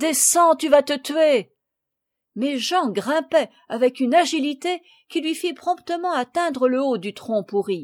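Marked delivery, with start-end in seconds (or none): 0.0-1.5 crying out, exclaiming. M. de Rugès calls to Jean as he climbs a tree, exclaiming. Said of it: "s'écria M".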